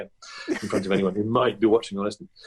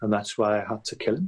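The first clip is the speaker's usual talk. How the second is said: put-on voice with a dark attitude. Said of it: "Cheryl always sounds like the next thing she would say".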